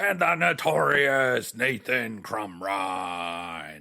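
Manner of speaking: very slow, loud, drawn-out monster truck announcer voice. Introducing a guest while acting like a monster truck rally announcer. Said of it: "That's how I'm gonna announce".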